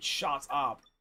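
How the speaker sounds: genuinely fed-up, low deadpan delivery. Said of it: "Like, genuinely".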